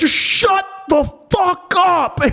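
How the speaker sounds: very high, unhinged, drawn-out scream. Recounting how he would answer your questions, retelling a scream. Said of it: "Just like scream".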